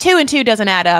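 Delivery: put-on loud, clumsy, failed Australian accent. Recapping an episode, quoting the brother: bad australian accent. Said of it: "I cannot do an Australian accent to save my life".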